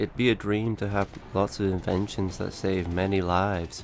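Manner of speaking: flat, scripted-sounding delivery. Reading a line aloud while a listener says it sounds scripted: unenthusiastic, scripted-sounding delivery. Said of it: "try to sound a little bit less enthusiastic".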